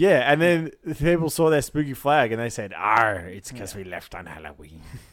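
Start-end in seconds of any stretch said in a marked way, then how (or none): 2.8-4.8 low cartoon leprechaun voice. Retelling what people said on seeing a ship's spooky flag, in a leprechaun voice. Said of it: "Is that a lepre- leprechaun voice?".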